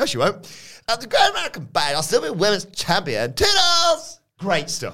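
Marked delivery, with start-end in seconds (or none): 0.9-4.2 high, swooping sing-song voice. Reading out her promo lines as written: impression of her. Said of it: "your impression of her".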